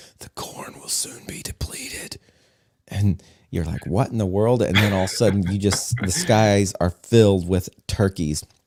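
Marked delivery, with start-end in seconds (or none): 0.2-2.2 hushed, breathy, carrying stage whisper. Somebody hiding inside finally answers the knocking at the doors, in a loud whisper. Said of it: "You hear a loud whisper".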